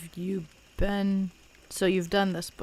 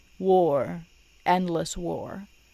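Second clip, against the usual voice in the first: ordinary talk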